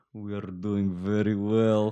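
Russian accent attempting bad northern English accent. Imagining scientists trying to blend in: Russian doing bad northern English accent. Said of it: "Russian scientists trying to do a northern accent".

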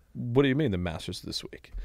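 ordinary talk, nothing marked

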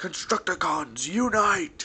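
deliberately terrible character voice, very high, shrill and loud. Interrupting instructions with a quick line: Scavenger voice. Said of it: "That was my terrible impression of Scavenger".

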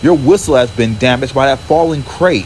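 ordinary delivery

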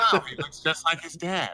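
dripping with snide sarcasm. Retelling a mother-in-law's comment about a pet, mocking tone imitating mother-in-law. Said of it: "she probably didn't say it with the same tone that I did".

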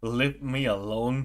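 mock fed-up, exasperated tone. Imitating a character who is done with visitors: imitating someone fed up. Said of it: "she's so done".

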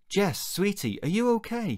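worried, concerned voice pitched very high. A father asks his staring daughter in a graveyard, sounding concerned. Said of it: "sounding concerned".

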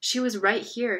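ordinary delivery

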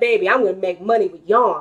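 plain

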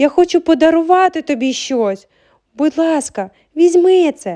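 out of breath. Reading aloud, a girl has run a block to catch her friend: breathless. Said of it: "важко дихаючи вимовила вона".

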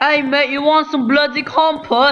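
very high-pitched put-on British accent. Joking about how the british say compost: put-on british accent. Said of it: "Because that's how the British say it".

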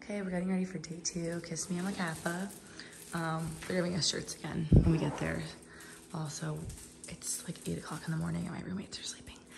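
low, hushed, barely audible whisper. Filming early in the morning while roommates are sleeping: whispering. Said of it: "So that's why I'm whispering".

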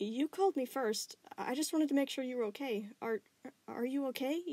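unsure tone. Over the phone, a girl answers the boy who called her first, uncertainly. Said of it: "Connie said uncertainly".

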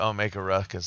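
ordinary delivery

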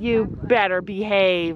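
mock fierce, menacing, ferocious harsh tone. Speaker recounts warning an animal at feeding time, in a retold ferocious voice. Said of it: "With my ferocious voice".

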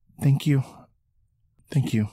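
very soft-spoken. She tucks the torn leather over her knees and thanks them, very soft voice. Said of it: "with a very soft voice".

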